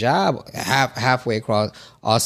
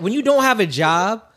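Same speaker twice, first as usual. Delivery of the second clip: speaking loudly, higher pitch; 9 semitones higher than usual. Explaining a point in a discussion with others: loud voice. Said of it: "am I too loud?".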